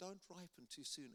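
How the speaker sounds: put-on strong English accent in a high-pitched voice. Retelling an old missionary's advice: imitating David Newington's high-pitched English accent. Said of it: "With his strong English accent and high-pitched voice".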